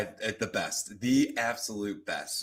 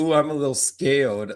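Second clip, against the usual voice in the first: put-on little two-year-old childlike toddler voice; 3 semitones higher, 6 dB louder than usual. Retelling how a contestant said a line: imitating a toddler-like voice. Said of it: "sounded like he said it like a two-year-old".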